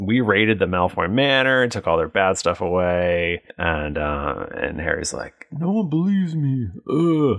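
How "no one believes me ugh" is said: very high-pitched put-on voice. Recapping the story, the speaker quotes Harry: Harry impression. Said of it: "that's my impression of Harry".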